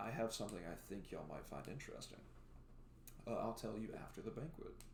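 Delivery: soft whispered word. Narrating a scene where she whispers to the group as she takes her seat. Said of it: "she whispers to y'all and says".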